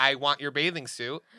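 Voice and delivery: ordinary talk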